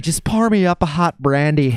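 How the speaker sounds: playful, high, put-on little-old-lady voice. Joking about liking hot brandy before a show: put-on old lady voice. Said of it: "I sound like an old lady".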